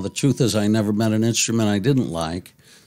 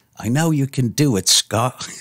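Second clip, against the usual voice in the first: poor, unconvincing attempt at an English accent; 3 semitones higher than usual. Retell the director talking to you in your dressing room, in a bad English accent as Adrian Lyne. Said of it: "I don't do a good English accent".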